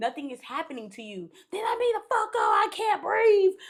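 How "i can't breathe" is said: full panic, high and loud cry. Retelling a woman's tantrum, imitating her panicking. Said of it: "about to have a whole panic attack".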